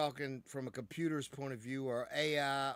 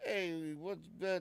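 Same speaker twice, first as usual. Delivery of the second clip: put-on New York accent; 4 semitones higher than usual. Speaker explains regional cadences, imitating people in New York: stereotypical New York accent. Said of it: "If you're in New York, you know people are like".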